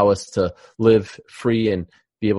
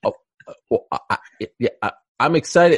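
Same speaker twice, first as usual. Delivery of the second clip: mock flustered stammer, higher pitch; 5 semitones higher than usual. Mocking how DC sounded when the show was thrown to him: imitating DC stammering. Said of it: "he sounds like".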